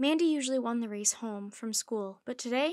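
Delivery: ordinary delivery, nothing marked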